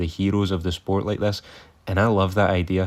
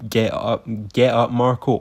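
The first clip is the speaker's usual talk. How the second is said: mock mild yell, slow, drawn out and held back; 3 semitones higher than usual. Retelling a fight, imitating the corner man: imitating someone screaming. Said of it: "just screaming at him".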